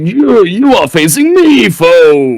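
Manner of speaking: thundering, slow, high, booming delivery, "foe" stretched. A player voicing a voice that erupts from nothing to face a foe, booming. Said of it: "this booming voice erupts from nothing".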